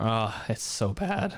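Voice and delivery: voice cracking. Chatting with another speaker, voice cracking. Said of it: "voice crack".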